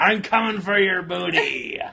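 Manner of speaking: loud, high, swashbuckling pirate holler. Speaker shows how she reads out loud to the kids; pirate voice. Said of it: "Your pirate booty?".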